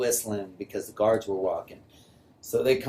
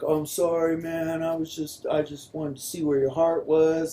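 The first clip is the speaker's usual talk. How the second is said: acted sobbing, blubbering, tearful voice; 7 semitones higher than usual. Retelling an apology after a fight in a cell: imitating someone crying. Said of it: "starts crying".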